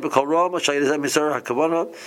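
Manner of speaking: usual speaking voice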